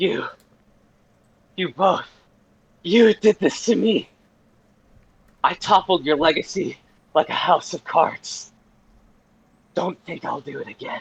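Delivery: hoarse distorted threatening rasp. Narrating Fiora's threat to the two players: Fiora's hoarse, distorted voice. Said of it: "You hear Fiora's voice. It's hoarse, distorted".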